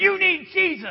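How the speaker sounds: put-on pushy preacher voice. Speaker describing in-your-face evangelism, imitating an in-your-face evangelist. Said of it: "someone gets into your face and they're like".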